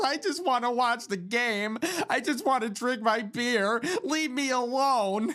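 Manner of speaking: whiny, tearful voice on the verge of crying. Retelling a man on stage with his guitar: imitating someone about to cry. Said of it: "he's up there sounding like he's gonna cry".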